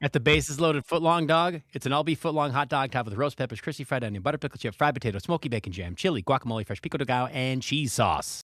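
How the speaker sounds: breakneck double-time reading, rattled off. Asked to read a list aloud for a video reel, very fast reading. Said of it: "read as fast as you can".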